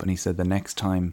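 usual speaking voice

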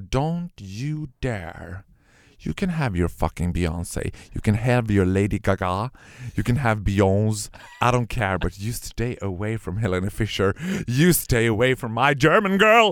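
put-on, ice-cold, icy tone. Speaker reenacts answering someone who claimed to listen to [name], retelling an ice-cold warning. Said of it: "Och då blev jag liksom iskall".

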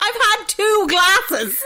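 high, slow, loud, exasperated tone. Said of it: "I'm like".

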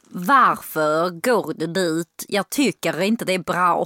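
put-on Skåne dialect of southern Swedish. Speaker showing off a dialect talent on request, in Skåne dialect. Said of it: "Skånska".

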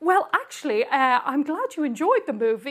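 put-on proper English accent, polite. Retelling Henry Cavill's reply about the movie: proper English Henry Cavill voice. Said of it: "who's very proper and very English".

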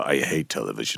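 rasping, rough, creaky voice. Retelling what Marco said on first meeting: imitating Marco's voice. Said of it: "in his voice".

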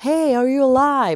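high, loud screaming yell. Speaker retelling what a man did, imitating him screaming. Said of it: "skriker så här".

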